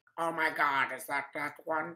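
voice dropped way down. Trying out the voice of Alistair for the others: Alistair voice. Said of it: "let me hear Alistair's voice".

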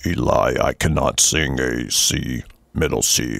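very deep voice pitched way down low. Imagining someone whose voice sits way down low, in a very deep low voice. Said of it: "just imagine someone with a voice way down here".

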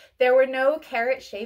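plain

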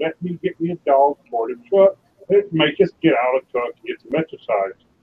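ordinary talk

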